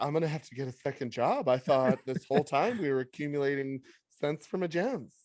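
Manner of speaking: put-on female character voice. Retelling a woman's reaction to a co-host, imitating a woman's voice. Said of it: "It's a really good like women woman voice".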